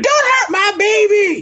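very high, drawn-out screaming mother voice. Mocking a wrestler's mother at ringside: imitating a mom screaming. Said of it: "having his mommy at ringside screaming".

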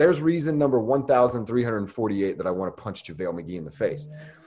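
ordinary talk, nothing marked

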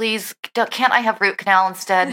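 put-on dreading butler voice. Imitating the butlers' faces when the ladies arrive: imitating dreading butlers. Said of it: "they're just dreading".

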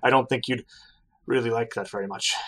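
put-on drunk, tipsy, loose-sounding voice. In a tabletop actual play, a character who has had some drinks speaks: drunk. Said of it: "And you turn around to see [name], / but has certainly had some drinks. / lass? ... son".

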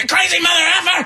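very high, furious yelling outburst. Retelling a driver who almost hit them: imitating an aggressive driver yelling. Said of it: "just an aggressive fat chick".

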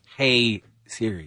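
hushed whispering voice. Saying a phone command aloud so the assistant won't hear: whispering. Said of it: "I know I'm whispering 'cause she's listening".

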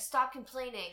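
ordinary talk

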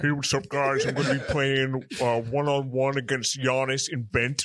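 extremely low acted voice. Asked to do the voice again, imitating Baron: super deep Baron voice. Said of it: "Do the voice again".

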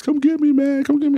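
very high-pitched, tearful sobbing, begging tone. Retelling calling friends on the phone to be picked up: retelling own crying plea. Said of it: "I'm on the phone crying".

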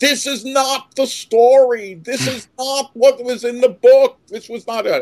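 very high, indignant shrieking screams, acted out. Retelling standing up at 13 in a theater full of kids, retelling own screaming. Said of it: "and I started screaming".

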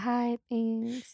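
put-on unenthusiastic tone. Retelling how a star greeted fans who spent so much, imitating an unenthusiastic greeting. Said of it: "very unenthusiastic".

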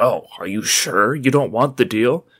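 mocking, condescending tone. Retelling what a woman said to them while they ordered wings, imitating someone condescending. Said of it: "she was so condescending".

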